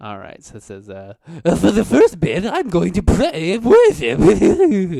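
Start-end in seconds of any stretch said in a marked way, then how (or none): 1.4-5.0 very high, loud, shrill, booming, swooping sing-song put-on voice. Reading a player's typed message aloud: Seth impersonation. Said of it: "I'll just do my best Seth impersonation".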